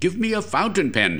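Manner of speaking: very high, sharp, snapped tone. Narrator reads Mitty's demand at the machine, snapped. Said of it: "he snapped".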